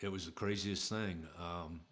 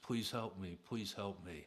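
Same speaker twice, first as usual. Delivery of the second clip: mock tearful, crying, pleading tone. Retelling how a man starts crying and begs the speaker, imitating someone crying, pleading. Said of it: "he starts crying and he looks at me and he goes".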